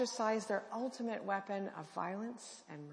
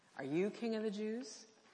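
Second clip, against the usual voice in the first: put-on mocking tone. Giving a dramatic paraphrase of an interrogation, acting out a mocking question. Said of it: "I think quite likely in a mocking tone".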